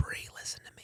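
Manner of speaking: hushed, very quiet, barely audible whisper. Retelling what was said to brie in the car, retelling a whisper. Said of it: "I'm whispering and you can hear me".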